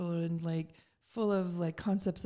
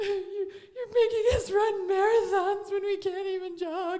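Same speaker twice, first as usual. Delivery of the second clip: play-acted, very high, loud, tearful crying; 13 semitones higher, 7 dB louder than usual. Speaker retells crying to her during hard meditation training, retelling a tearful complaint. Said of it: "I remember crying to her".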